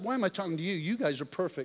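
play-acted mad, heated angry outburst. Retelling what was said in the truck after getting mad: retelling own angry words. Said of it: "And then I got mad".

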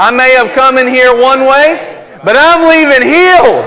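high, loud, fully convinced delivery.

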